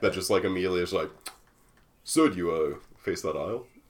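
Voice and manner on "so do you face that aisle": stiff, switched-on corporate manager tone. Complaining about managers who switch into corporate mode, imitating Amelia's corporate voice. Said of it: "that was a specific voice you were doing there".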